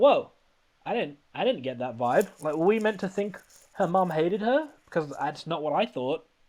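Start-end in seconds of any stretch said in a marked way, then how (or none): none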